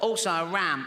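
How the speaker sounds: funny, silly little voice. Retelling a child's Christmas request to Dad, in a funny little voice. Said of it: "a funny little voice because his all chest".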